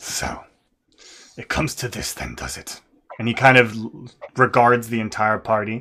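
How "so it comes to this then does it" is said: hushed, breathy, gravelly growl. Voicing a character who regards the whole party, quiet gristly growly voice. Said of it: "speaks quietly, but with this gristly, growly voice".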